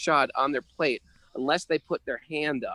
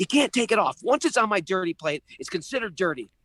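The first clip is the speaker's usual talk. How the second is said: put-on furious, angry yelling, pitched up; 6 semitones higher than usual. Retelling a quarrel over the food, the speaker acts out the man's mock-angry yell. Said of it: "He starts yelling at me".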